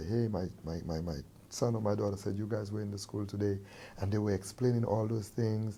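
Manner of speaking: normal talking voice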